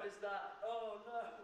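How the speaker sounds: hyped shouting, voices overlapping each other.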